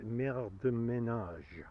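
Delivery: put-on attempt at a French accent. Reading out what an Apple tag says: put-on French accent. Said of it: "in my best French accent".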